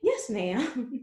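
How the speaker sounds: polite, respectful, proper put-on voice. Retelling a reply to a pastor who messaged: polite church voice. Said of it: "put my good church voice on".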